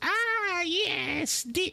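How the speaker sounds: put-on very high, frail, decrepit old-lady crone voice. Voicing an old lady who walks out to the counter: decrepit old lady voice. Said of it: "a decrepit old lady walks out and goes".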